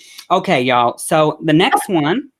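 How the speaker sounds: put-on, slow American accent. Doing an impression of an american mum, american mum impression, american accent. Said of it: "this is my impression of American Mum".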